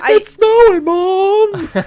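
put-on weird, very high, loud kid voice. Joking about parents and kids at a snow globe store, weird kid voice. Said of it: "I'm making a weird like kid like".

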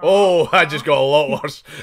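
loud outburst, laughing through the words.

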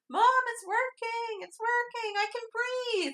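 acted-out, shrill, very high, excited shout. Retelling a scene where he calls up the stairs to Mom: imitating a scream. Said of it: "screams up the stairs".

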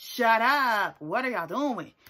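loud, drawn-out yelling. Retelling yelling at the screen while watching: imitating own yelling. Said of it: "yelling at the screen".

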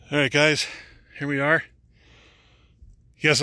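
breathless, winded voice. Just after walking up a hill of stairs, the speaker greets the guys, out of breath. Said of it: "I'm out of breath".

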